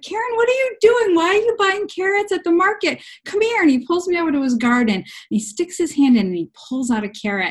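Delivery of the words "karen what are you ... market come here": imitated yelling, higher. Retelling how the landlord reacted to market carrots: imitating someone yelling. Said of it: "started yelling".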